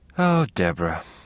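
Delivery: spoken through a sigh. The narrator addressing deborah, who cannot hear, sighing very softly. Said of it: "I sighed, very softly".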